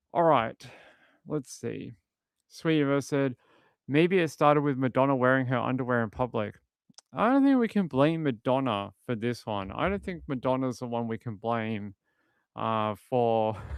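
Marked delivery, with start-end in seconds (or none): none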